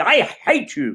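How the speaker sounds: mock caustic, resentful, high childish outburst. Imitating a child stamping their foot at a parent: imitating a child's bitter outburst. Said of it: "filled with caustic bitterness as they stamp their foot".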